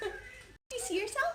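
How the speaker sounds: put-on high, soft, baby-talk voice.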